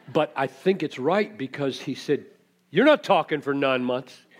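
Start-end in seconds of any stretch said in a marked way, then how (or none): 2.6-4.1 loud, angry, rebuking put-on angel voice. Retelling the angel's reply to Zechariah: acting out an angry angel. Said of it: "He was mad".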